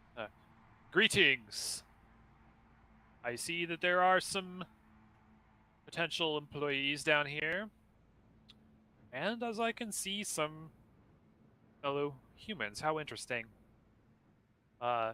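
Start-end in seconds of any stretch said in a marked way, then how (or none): 1.0-13.5 imposing, grand, proclaiming voice. Narrating a game, voicing a figure who greets the devilish crowd: booming voice. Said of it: "his voice booms out".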